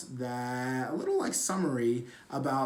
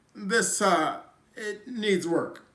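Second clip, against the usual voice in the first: slow, halting, raised voice, pausing mid-line; 7 semitones higher, 6 dB louder than usual. Describing Obama stickers put on her paper, voiced as him: Barack Obama impression. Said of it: "in his voice".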